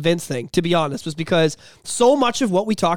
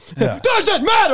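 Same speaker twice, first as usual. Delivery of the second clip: high, pitched-up, sudden mock yell; 12 semitones higher than usual. Retelling how a celebrity shouted back at a man, retelling a yell. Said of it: "like he yelled at him".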